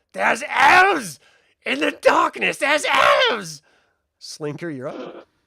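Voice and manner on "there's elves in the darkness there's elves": very high, very loud, rough shrieking scream. Running the game, the speaker voices a character just hit in the chest, screaming out. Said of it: "Screams out".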